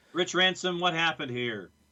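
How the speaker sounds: yelling. Speaker calling out to someone by name, yelling. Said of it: "Why are you yelling at Rich?".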